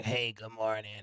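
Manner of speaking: very soft, hushed, deep, raspy smoker's voice. Describing a former director from England, imitating England's raspy voice. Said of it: "She had a real raspy voice".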